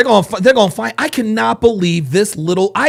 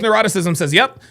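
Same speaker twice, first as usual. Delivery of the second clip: usual speaking voice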